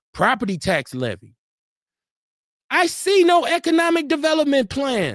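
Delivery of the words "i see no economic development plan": outright shouting, rising, high-pitched yell. Criticizing the county's property tax levy, the speaker is yelling. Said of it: "Sorry for yelling".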